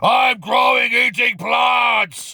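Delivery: very slow, stretched-out, high, drawn-out scream. Retelling what the powerlifter says into a microphone: imitating Patrick Baboumian screaming. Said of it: "he screams into a microphone".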